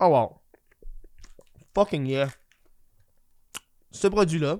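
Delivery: talking with mouth full. Reacting after tasting a brownie product, talking with mouth full. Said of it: "je parle en même temps d'avoir la bouche pleine".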